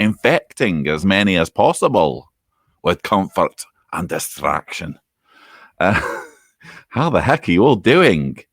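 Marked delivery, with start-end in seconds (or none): 0.0-5.0 faint put-on hint of Scottish accent. Opening a video from self-isolation, repeating the line in a slight Scottish accent. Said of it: "I said that in a remotely Scottish accent".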